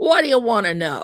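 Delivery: real gruff male voice. Retelling a late-night phone call answered by a man: imitating a gruff man. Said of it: "Real gruff".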